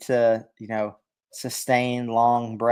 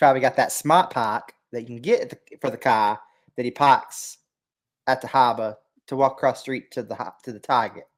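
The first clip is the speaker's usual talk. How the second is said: put-on, thick Boston accent. Performing a dialect bit for a recorded show: thick Boston accent. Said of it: "The Boston accent is my favorite".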